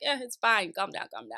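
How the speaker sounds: low, calm, easygoing, unbothered, reassuring voice. Retelling an argument, Usman telling her to calm down: imitating Usman's calm voice. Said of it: "Usman is still talking in his calm voice".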